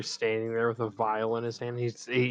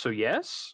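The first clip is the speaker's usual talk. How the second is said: so yes said with a rising, questioning tune. Voicing a character agreeing to help open a portal: question mark in his voice. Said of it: "a question mark in his voice".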